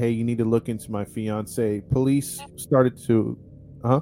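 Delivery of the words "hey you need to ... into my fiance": plain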